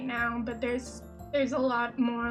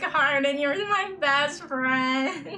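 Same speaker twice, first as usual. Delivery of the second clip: fake drunk slurring and gargling, louder, slower; 3 semitones higher, 5 dB louder than usual. Describing how you act in the middle of a stream, mock-drunk slurring and gargling. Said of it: "gargling and slurring my words like".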